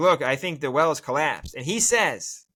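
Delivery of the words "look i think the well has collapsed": ordinary talk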